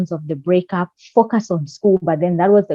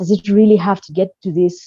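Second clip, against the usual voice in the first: normal talking voice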